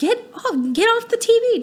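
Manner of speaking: shrill, high, loud, exasperated and frustrated shout. Demonstrating how a parent yells at kids watching tv, loud frustrated yelling. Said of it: "you're loud and frustrated".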